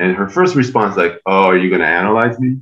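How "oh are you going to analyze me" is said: snide, mocking, cynical and sarcastic tone. Retelling a seatmate's reply on a plane: imitating a cynical, sarcastic remark. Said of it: "very cynical, very sarcastic".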